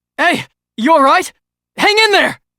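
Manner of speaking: loud shouting. Calling out to a groaning companion to hang in there: shouting. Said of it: "stop shouting".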